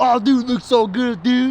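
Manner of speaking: caveman talk, laid on thick. A speaker reacts to how something looks: caveman voice. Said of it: "I kind of caveman that".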